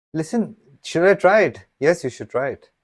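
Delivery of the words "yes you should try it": flat, half-hearted, unconvinced tone with no conviction. Playing a machine answering whether to try something: answer lacking conviction. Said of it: "Are you sensing the lack of conviction in my vo voice?".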